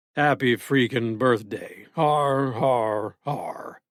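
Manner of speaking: extremely low deep voice. Reading a scene where a character makes a baby laugh: very deep baritone voice. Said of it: "lowering his voice to a baritone so deep".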